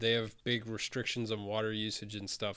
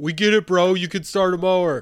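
very loud, high holler; 8 semitones higher, 16 dB louder than usual. Teasing someone who struggled to start a mower, mock yelling out a window. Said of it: "I would have yelled out the window".

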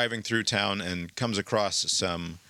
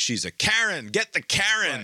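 put-on crowd shout, very high and drawn-out; 9 semitones higher, 3 dB louder than usual. Retelling protesters crowding a car: imitating people shouting. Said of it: "they start shouting at her".

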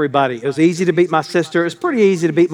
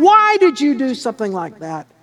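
put-on upset child's voice crying through tears, swooping; 7 semitones higher than usual. Retelling being knocked off a bike as a child, retelling own crying. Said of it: "I was crying".

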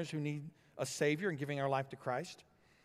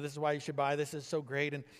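normal talking voice

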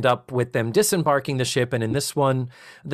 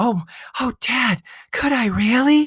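put-on whisper, higher; 10 semitones higher, 3 dB louder than usual. Retelling a TV scene where the daughter answers her dad: imitating Penny whispering. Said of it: "She whispers".

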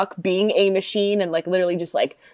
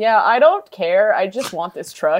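put-on deadpan movie-star voice, slower. After others say they want to win, give Sylvester Stallone's answer as a deadpan Sylvester Stallone imitation. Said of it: "was just so deadpan".

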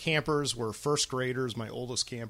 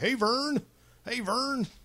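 high-pitched, repeated calling out; 12 semitones higher than usual. Comparing a friend to an off-camera character, imitating Ernest calling Vern. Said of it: "how Ernest would always be like".

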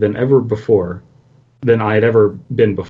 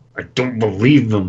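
spoken through clenched, gritted teeth. Reading a character's reply in a story, through clenched teeth. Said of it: "I said through clenched teeth".

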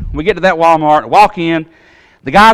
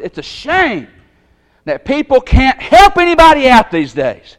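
put-on hateful, angry, raised voice, pitched up; 8 semitones higher than usual. Retelling a confrontation with a young man at a door, retelling a raised voice. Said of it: "I raised my voice".

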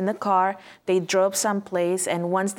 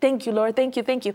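put-on tearful, weeping, grateful-sounding voice; 4 semitones higher than usual. Retelling a mother's thanks after getting her baby out: imitating someone crying. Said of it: "and crying and just think".

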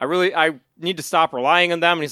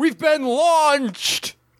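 mock grave, dead-serious yell, pitched way up; 9 semitones higher than usual. Recounting a boat scene with Goldar and Rito: imitating Goldar's serious shout. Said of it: "Goldar in a very serious voice just shouts".

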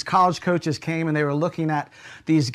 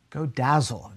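British-sounding voice; 5 semitones lower, 4 dB quieter than usual. Retelling what the coach said in encouragement: british accent. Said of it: "in his British accent".

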